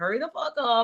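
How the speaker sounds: angry, heated voice. Recalling a game where a man was slow, she reenacts being pissed off. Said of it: "At that moment, I was pissed".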